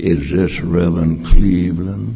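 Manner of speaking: dangerous, threatening, deep, menacing voice. Retelling a phone call from a Chicago city deputy, quoting his deep menacing voice. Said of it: "deep voice, menacing voice, dangerous voice".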